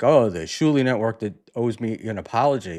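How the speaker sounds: ordinary talk, nothing marked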